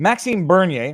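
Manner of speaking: English-style pronunciation. Showing how English speakers say the name: English pronunciation. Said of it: "if you're an Anglophone or an American".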